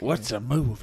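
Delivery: western-film cowboy delivery. Imitating a colleague's reaction with a little cowboy bit: Clint Eastwood-like voice. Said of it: "I don't know why it sounds like Clint Eastwood".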